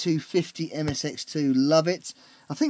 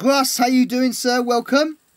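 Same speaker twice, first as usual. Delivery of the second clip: booming, loud, raised shouting; 6 semitones higher, 7 dB louder than usual. Greeting someone called grass and welcoming him, shouting. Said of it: "Sorry, I shouted there".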